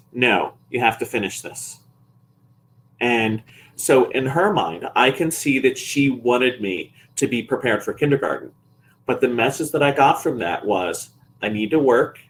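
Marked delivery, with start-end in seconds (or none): 0.2-1.8 put-on stern tone. Speaker retells mom's answer when asked for a break, imitating mom's stern voice. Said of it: "she said in a stern voice".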